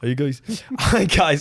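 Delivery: botched, bad attempt at Birmingham UK accent. Reading out a listener's message from Birmingham, UK, in a bad Birmingham accent. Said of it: "accent was that?".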